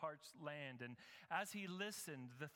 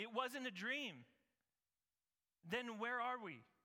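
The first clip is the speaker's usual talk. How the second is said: high, cried-out voice; 7 semitones higher, 4 dB louder than usual. Narrating the story, reading Sam's words as he wakes up, crying out. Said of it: "Sam cried out".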